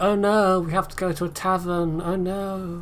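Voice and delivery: high, very slow sarcastic dismay. Imitating what Othello would say about going to a tavern: sarcastic. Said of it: "that was sarcasm".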